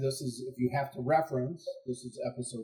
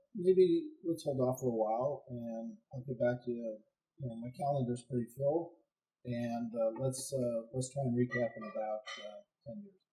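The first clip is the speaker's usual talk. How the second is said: ordinary talk, nothing marked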